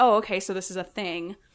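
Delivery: ordinary delivery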